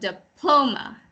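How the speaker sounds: diploma with stress on second syllable, PLO. Going over how to say diploma: stress on second syllable of diploma. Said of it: "the accent is on um, the second syllable".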